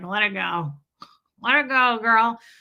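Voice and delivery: sarcastic. Showing the only way they'd ever say it to anyone, sarcastic. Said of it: "unless I'm being sarcastic and I'm like".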